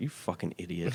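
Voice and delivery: furious, angry, scolding voice. Retelling how angry the staff were: imitating angry coworkers. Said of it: "so mad at me".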